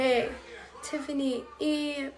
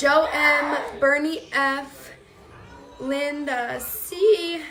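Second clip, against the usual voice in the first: loud voice, breaking and cracking; 6 dB louder than usual. Reading out a list of names, voice cracking. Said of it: "my voice is cracking again".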